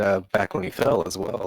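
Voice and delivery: ordinary talk, nothing marked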